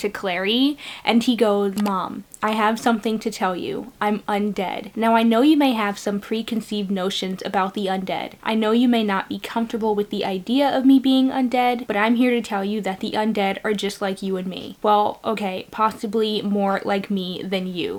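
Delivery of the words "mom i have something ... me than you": usual speaking voice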